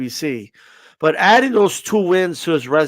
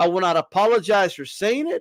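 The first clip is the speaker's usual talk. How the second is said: normal talking voice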